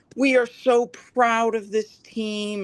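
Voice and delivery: very high, slow, sarcastically proud gushing tone. Imitating Kentucky after a Sweet Sixteen exit: mockingly imitating Kentucky. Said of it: "Now they're just like".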